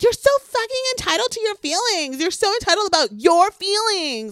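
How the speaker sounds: very high, shrill screaming rant, acted. Describing an argument, the speaker acts out a man screaming at Katie, retelling a scream. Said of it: "It's like he's screaming".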